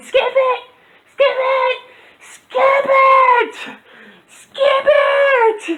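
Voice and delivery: very high, very slow, stretched pleading scream. Retelling a brother losing a game, imitating brother screaming.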